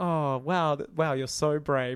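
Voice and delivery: put-on mocking, sarcastic praising tone. Retelling a nurse scene in a film: imitating a nurse mocking. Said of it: "mocking him".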